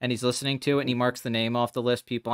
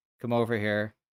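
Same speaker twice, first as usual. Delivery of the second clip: very flat, deadpan delivery; 2 semitones lower than usual. Acting out a character's lines while pitching a movie role: very deadpan. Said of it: "very deadpan".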